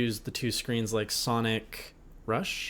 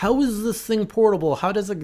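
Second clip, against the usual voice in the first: very high, shrill, loud, jeering, derisive whine; 10 semitones higher, 7 dB louder than usual. Imitating the other speaker's past complaint about the Switch: imitating the other speaker mockingly. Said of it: "this is what you sound like when I'm imitating".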